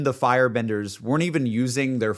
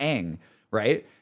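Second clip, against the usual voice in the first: usual speaking voice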